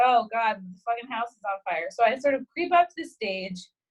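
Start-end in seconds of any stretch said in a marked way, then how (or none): none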